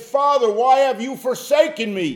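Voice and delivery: loud, very high crying-out voice. Retelling Jesus's words to the Father from the cross, retelling a loud cry. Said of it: "with a loud voice".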